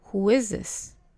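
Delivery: ordinary delivery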